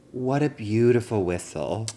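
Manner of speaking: ordinary talk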